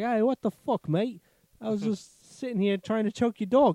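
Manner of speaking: very high-pitched kangaroo voice. Acting out a kangaroo punched in the nose: kangaroo voice. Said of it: "The kangaroo's like".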